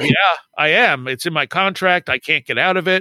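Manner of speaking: normal talking voice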